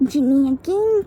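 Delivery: ordinary delivery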